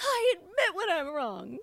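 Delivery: loud, very high, emphatic, forceful, insistent delivery. Teasing a friend, the speaker mimics how they say it: mimicking forceful delivery. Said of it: "when you put a lot of energy behind it".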